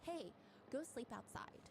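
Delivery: slow, bossy, no-nonsense nanny voice. Acting out a confinement nanny telling off a mother-in-law: imitating a bossy confinement nanny. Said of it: "The confinement nanny is like".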